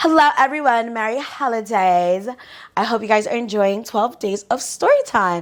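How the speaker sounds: put-on Valley Girl accent. Greeting viewers at the start of a story time: put-on Valley Girl accent. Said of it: "let me put on my, um, my Valley Girl accent".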